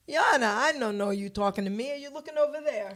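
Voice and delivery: put-on Italian-accented English. Retelling his father answering a judge, imitating Mr. Petito's Italian accent. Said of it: "my father's got this Italian accent".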